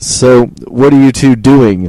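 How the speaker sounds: patronizing, condescending, talking-down tone. Retelling what an officer asked when caught: imitating a condescending tone. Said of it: "in kind of a condescending way".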